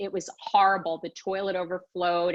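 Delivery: ordinary delivery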